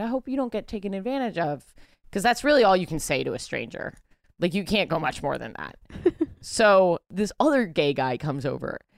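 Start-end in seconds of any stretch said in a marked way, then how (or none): 0.0-1.6 very softly spoken, quieter and higher pitched. Retelling what the speaker said to a stranger, said very softly. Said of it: "I very softly said to him".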